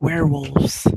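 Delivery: hushed whispered word. Playing a character passing on what he has heard, he whispers. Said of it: "and he whispers".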